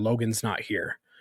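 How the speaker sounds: eerie, chilling, very scary, menacing voice. Retelling answering the wife late that night: imitating a very scary voice. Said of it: "in a very scary voice told her".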